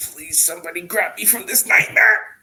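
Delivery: high, loud, desperate, begging cry. A speaker voices Balgroth's inner thoughts: voicing Balgroth pleading. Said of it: "Balgroth is like".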